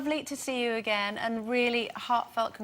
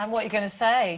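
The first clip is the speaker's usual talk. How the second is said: normal talking voice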